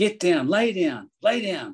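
play-acted, slow, high yelling, each word drawn out. Retelling a loadmaster running over with a stretcher: imitating someone yelling. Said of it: "he's yelling at me".

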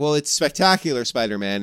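ordinary delivery

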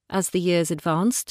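plain reading voice

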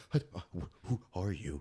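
very deep, very quiet oddball character voice. Retelling a scene where a woman approaches him: impression of the crazy man. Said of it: "that's actually not a terrible impression of him".

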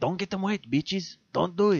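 put-on Spanish accent.

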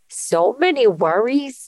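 put-on grandfather voice.

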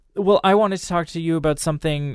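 mocking imitation. Retelling what she suddenly said, mocking imitation of her. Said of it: "I kind of took on a mocking tone there".

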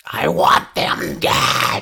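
very slow, creaky, rough spirit shriek. Voicing a spirit waking a sleeper: screeching spirit voice. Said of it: "I'm gonna say with that screech".

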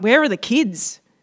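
acted, blurted, accusing tone. Retelling how the speaker blurted out a question, sounding accusatory. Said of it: "it sounds accusatory".

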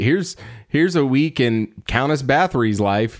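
plain

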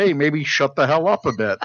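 mock sarcastic delivery. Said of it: "in, like, a sarcastic way".

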